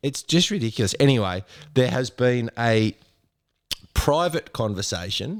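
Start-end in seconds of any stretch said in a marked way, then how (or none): 3.9-5.4 private stressed, said slowly. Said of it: "I emphasise the word private".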